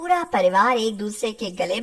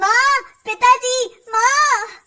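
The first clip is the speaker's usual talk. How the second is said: very high, gleeful, happy shout; 12 semitones higher, 6 dB louder than usual. Calling parents from another room, shouting happily to call parents. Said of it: "चिल्ला चिल्ला कर अपनी माँ और पिता".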